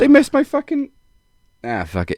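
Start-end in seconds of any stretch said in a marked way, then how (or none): 0.0-0.9 very high-pitched, puzzled, bewildered voice. Retelling a moment when pyro was missed: imitating confused Cody. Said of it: "I could almost hear him going".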